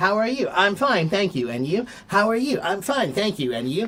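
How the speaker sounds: mock robotic, rote, mechanical delivery. Speaker mimicking how the listeners answer a greeting, mock robot-like rote answer. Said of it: "Like a robot, you guys are".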